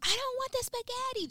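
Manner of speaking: mock little-kid scream, very high-pitched. Retelling a little cousin's outburst at Thanksgiving dinner: imitating a child screaming. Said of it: "she was screaming".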